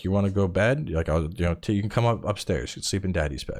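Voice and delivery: ordinary talk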